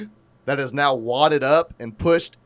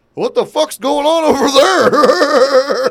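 high, loud, slow, put-on drunk yelling. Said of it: "That's a pretty good Trisha's sister impersonation".

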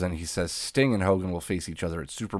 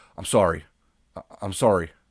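put-on contrite, apologetic, small-sounding voice. Retelling how he looked around after doing it, mock-apologizing. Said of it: "He's like apologizing".

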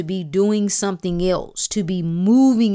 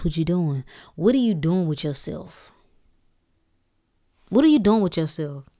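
put-on inner-voice character, lower; 2 semitones lower than usual. Speaker voicing the spirit that disrupts us, the 'what you doing' voice. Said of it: "I'm playing the what you doing voice".

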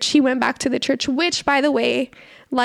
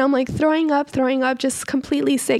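ordinary talk

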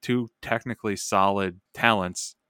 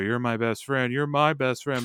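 mock half-hearted shouting, mild and heated; 4 semitones higher than usual. Retelling two rivals in a match screaming at each other: imitating someone screaming. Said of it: "they're screaming at each other".

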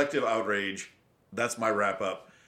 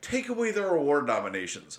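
ordinary talk, nothing marked

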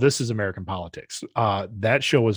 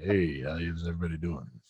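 bass voice, much lower, quieter; 4 semitones lower, 7 dB quieter than usual. Showing the other speaker how to greet everybody: more bass in the voice. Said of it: "Gotta put more bass in your voice".

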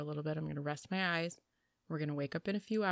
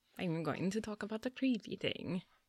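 spooky, put-on vampire voice; 2 semitones higher than usual. Announcing the topic of a creepy story, in a spooky vampire voice. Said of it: "It was a vampire voice".

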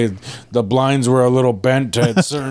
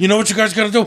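mock coked-up voice, higher pitch; 7 semitones higher than usual. Imitating the manager hyped up on cocaine: imitating a manager on cocaine. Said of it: "start acting like a real manager when we get him some cocaine".

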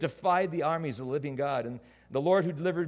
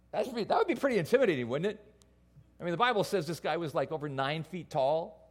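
ordinary delivery

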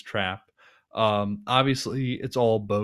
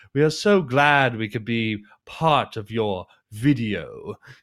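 loud, dramatic, over-the-top camp showman delivery; 5 dB louder than usual. Retelling how Gordon praises a speech: over-the-top campy Gordon voice. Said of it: "he gives this very dramatic bit".

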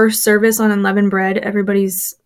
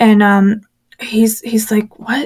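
ordinary talk

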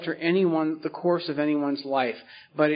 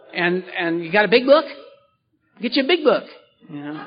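put-on slightly twangy voice; 3 semitones higher, 4 dB louder than usual. Imitating people getting sober in Orange County, with a slight twang. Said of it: "you get a little twang".

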